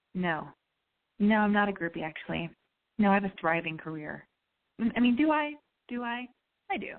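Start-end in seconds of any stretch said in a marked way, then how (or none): 0.1-4.2 mock dry deadpan, lower pitch, faster. Retelling answering a guy who asked if they were a groupie, retold deadpan. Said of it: "I was so dry and so deadpan".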